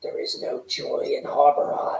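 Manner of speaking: whispered, very quiet. Speaking in character about a gloomy town, very quietly. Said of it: "and I say this quietly, very quietly".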